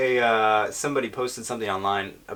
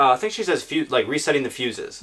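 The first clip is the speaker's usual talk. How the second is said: usual speaking voice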